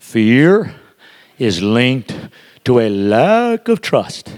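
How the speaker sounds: very slow, low, halting, word by word, "lack" drawn out. Repeating the point for someone writing notes, say it very slow. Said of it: "I'm going to say it slow".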